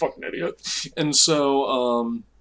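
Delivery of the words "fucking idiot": stifled giggle, muttered under the breath. Retelling a prank, quoting their own past words: imitating giggling under breath. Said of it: "giggling under our breath".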